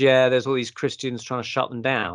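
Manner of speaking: plain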